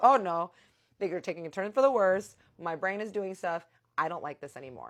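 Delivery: mock frightened, unraveling running commentary voice. Retelling a frightening hallucination at a party: retelling own fearful voice. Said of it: "And I'm scared now".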